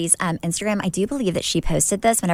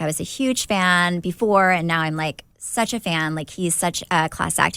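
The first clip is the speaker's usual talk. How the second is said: ordinary talk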